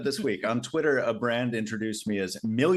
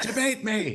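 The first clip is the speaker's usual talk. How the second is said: high mock shout, yelled up high. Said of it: "I'm shouting out loud to myself".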